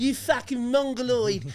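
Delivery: put-on Australian accent. Imitating Australian players insulting someone: imitating an Australian accent. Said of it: "this word is more insulting when said in their accent".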